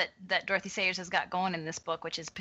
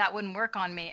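ordinary talk

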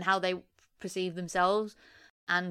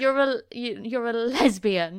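slow, loud, condemning accusatory tone with halting start; 4 semitones higher, 8 dB louder than usual. Retelling a mum's confrontation from a movie: imitating a damning accusation. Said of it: "says it in such a damning way".

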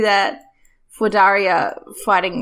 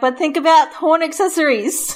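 high, called-out yelling; 8 semitones higher than usual. A player's character runs to the gym and yells back at a muttering man. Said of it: "she yells back".

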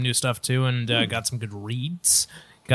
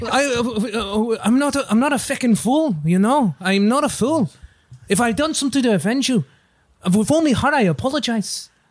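put-on Irish accent, much higher, louder; 10 semitones higher, 4 dB louder than usual. Asked by another speaker for their best Irish accent, doing an Irish accent. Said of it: "Do your best Irish accent".

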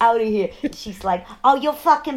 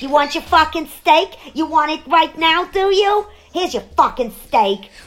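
put-on New York accent; 4 semitones higher than usual. Impersonating a woman in an anecdote, with a put-on Queens accent. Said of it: "She sounds like she's from Queens".

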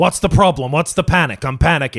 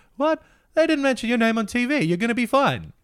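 very high, soft, dopey, simple-sounding voice; 11 semitones higher, 4 dB quieter than usual. Describing a scene, the speaker acts out a character: soft-spoken dim Georgie voice. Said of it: "he's like this softly spoken, like kind of dumb guy".

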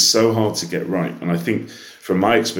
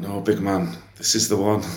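attempted put-on Scottish accent; 3 semitones higher than usual. Retelling what someone said about a music track: attempted scottish accent. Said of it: "me trying to do a Scottish accent".

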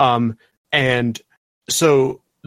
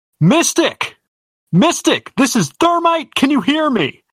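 very high-pitched, urgent, calling shout; 14 semitones higher, 3 dB louder than usual. Thermite runs straight up to Mystic and calls out to her, shouting. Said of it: "And she just shouts".

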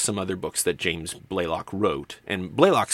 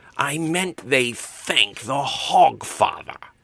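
hissed words; 6 semitones higher than usual. Narrator reading one character correcting another, hissed. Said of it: "Albert hissed".

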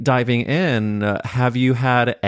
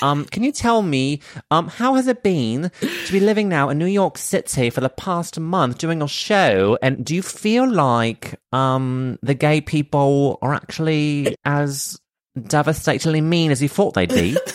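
put-on British accent; 4 semitones higher than usual. Asking the other person a question in a role-play, put-on British accent. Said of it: "so I'll go British".

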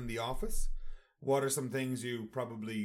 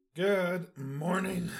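hoarse, croaky voice, pitched up; 5 semitones higher, 4 dB louder than usual. Speaker opening with a greeting; frog in the throat. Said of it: "I have a frog in my throat".

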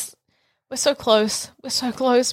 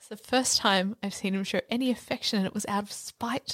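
very quiet, low, under-the-breath mutter; 6 semitones lower, 9 dB quieter than usual. Speaking in character about another character's affection, muttering under breath. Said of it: "under my breath, I say".

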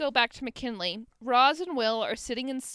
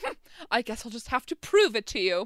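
fake upper-class voice. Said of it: "Except she says it a little bit sexier than that".

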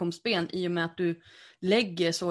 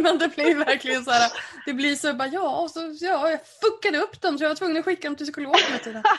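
talking through laughter, higher and louder; 9 semitones higher, 6 dB louder than usual. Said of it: "förlåt att jag skrattar".

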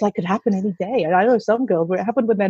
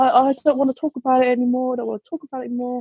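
pleading through sobs and tears; 3 semitones higher than usual. Retelling a daughter who keeps crying: imitating a crying child. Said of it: "she's just still crying".

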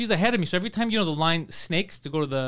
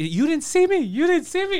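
very high, climbing, acted-out freaked-out panicked outburst; 10 semitones higher, 3 dB louder than usual. Retelling a cyclist hit by a reversing car: imitating someone freaking out. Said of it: "she's freaking out".

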